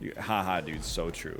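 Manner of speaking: mocking sarcasm. Showing how to answer a streamer's chat, sarcastic. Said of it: "you got to do it in a sarcastic voice".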